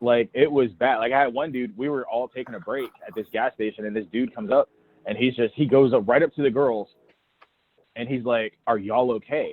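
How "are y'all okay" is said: put-on super concerned, worried tone. Retelling a stranger's question to the girls: imitating super concerned tone. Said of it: "super concerned".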